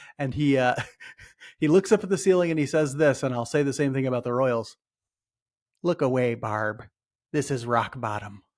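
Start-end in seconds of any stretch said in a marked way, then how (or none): 5.8-8.3 put-on slow Canadian accent, laid on deliberately. Quoting a man who looks up at the ceiling: put-on canadian accent. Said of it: "That's [name]'s best Canadian accent".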